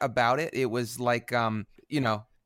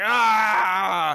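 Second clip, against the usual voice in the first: put-on, loud, high-pitched mock yell. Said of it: "He's like".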